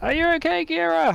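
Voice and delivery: very high, rough shout. Voicing a character who calls out to Gira through glass: shouting through glass. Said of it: "shouts through the glass".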